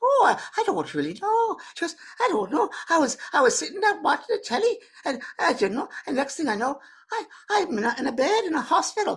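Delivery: high, put-on Scottish lady's voice. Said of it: "a lady from Scotland".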